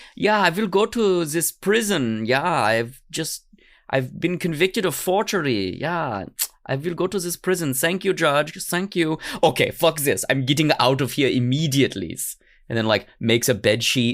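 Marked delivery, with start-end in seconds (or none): 0.2-12.2 fake German accent, pitched up, sustained throughout. Imitating young Billy Myers deciding where to go: put-on German accent. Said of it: "I don't know why he has a German accent".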